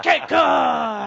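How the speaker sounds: martial arts karate chop shout. Trying out a name like a karate chop shout. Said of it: "It's gotta be like karate chop".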